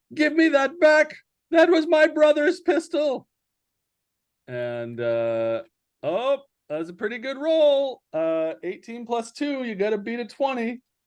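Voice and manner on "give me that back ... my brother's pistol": loud, raised shouting voice. Voicing a character grabbing back his brother's pistol, demanding it back. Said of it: "And he says".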